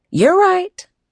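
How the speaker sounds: hurried, quick, high, all-too-eager hasty tone. [name] answers her son Martin, agreeing too quickly. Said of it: "[name] agreed too quickly".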